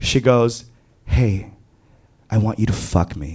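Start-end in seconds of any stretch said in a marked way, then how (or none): 1.0-3.4 hushed, soft half-whisper, like a stage whisper. Retelling words half-whispered close into the ear: imitating a half-whisper. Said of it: "whispers into my ear".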